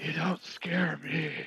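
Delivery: hushed voice. Answering strange whispers in character, defiant: whispering. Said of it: "I'm gonna whisper back in Draconic".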